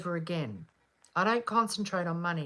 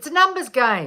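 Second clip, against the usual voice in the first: put-on raised, higher-pitched Australian accent; 5 semitones higher, 7 dB louder than usual. Retelling what a lover boy answered when asked how he did it, Australian accent impression. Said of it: "in that Australian accent".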